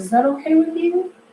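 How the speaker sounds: rising pitch at end on "okay with you". Demonstrating asking a hair client about a treatment, rising pitch at the end. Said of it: "Notice how I went higher at the end".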